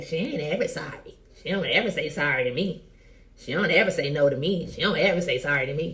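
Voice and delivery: ordinary talk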